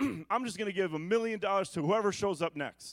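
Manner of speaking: mock sarcastic, tongue-in-cheek tone. Acting out a line they said earlier, retelling a sarcastic remark. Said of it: "I'm being sarcastic".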